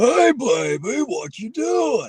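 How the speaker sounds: very high, very slow call. Retelling how Uncle Artie greets someone: Uncle Artie voice. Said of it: "if it's Uncle Artie, it sounds more like".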